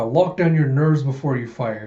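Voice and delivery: ordinary talk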